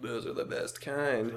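imitated whisper. Retelling a movie line a character says to his girl: imitating a whisper. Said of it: "he whispers to his girly".

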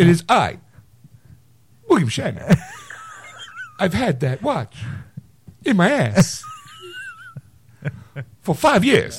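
very high, swooping, sing-song voice. Showing the other speaker how Shatner sounds: William Shatner voice. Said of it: "Shatner is this".

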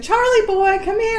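high, sweet, doting, coaxing voice.

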